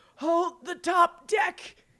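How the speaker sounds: dying snarl. A dying ship captain gives her crew a last order, snarling with her dying breath. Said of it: "she snarls with her dying breath".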